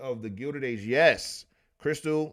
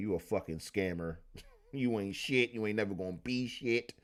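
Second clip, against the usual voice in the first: acted-out harsh, insulting, berating tirade; 2 semitones lower, 6 dB quieter than usual. Retelling how a woman insulted the fortune teller: imitating someone berating. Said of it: "she just shitted on that lady and was like".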